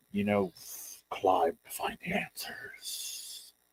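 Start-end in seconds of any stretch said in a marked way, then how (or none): 1.0-3.4 very hushed, growly whisper in a spirit voice. Voicing a bear spirit speaking from the totem: growly spirit voice. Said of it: "sort of growly".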